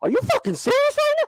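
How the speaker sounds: very high-pitched, fed-up, angry outburst. Showing how own voice sounds when mad: imitating own angry high-pitched voice. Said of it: "that's how my voice gets high".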